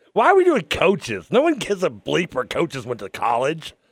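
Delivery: loud, swooping, mad, exasperated voice. During a trivia game, right after reading out a question, sounding mad. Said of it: "you sound like you're mad".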